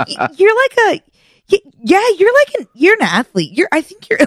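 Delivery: halting, very high, stammering, tripping over words. Retelling how the coach called them an athlete: imitating coach stumbling over words. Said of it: "he was, like, stumbling out of his".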